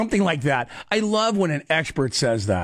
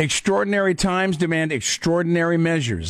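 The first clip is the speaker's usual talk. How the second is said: ordinary talk, nothing marked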